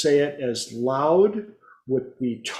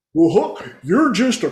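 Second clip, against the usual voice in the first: cartoon character voice, higher; 4 semitones higher, 5 dB louder than usual. Showing how people must repeat the same words as Goofy; Goofy voice. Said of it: "the voice of Goofy from Disney".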